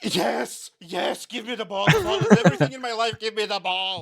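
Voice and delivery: very high, loud, yapping dog voice. Describing dogs begging a player for the ball: voicing the dogs in doggish. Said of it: "in doggish".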